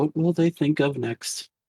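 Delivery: muttering under breath. Seeing a train's smoke across the river, a character is muttering under her breath. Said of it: "She's under her breath".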